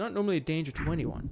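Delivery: ordinary delivery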